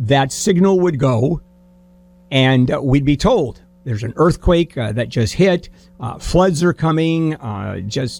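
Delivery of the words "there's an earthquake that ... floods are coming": usual speaking voice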